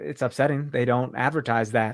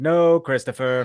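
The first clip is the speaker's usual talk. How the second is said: mock condescending tone, louder; 5 dB louder than usual. Showing how a full name gets used to scold someone: condescending tone. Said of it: "call people by their, like, long name, just condescendingly".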